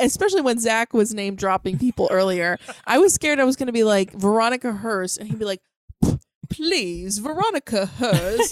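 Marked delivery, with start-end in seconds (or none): 6.5-8.5 put-on old Hollywood-style transatlantic accent. Imagining Zach's reply after his name dropping, playing Zach with a British accent. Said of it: "why does Zach have a British accent?".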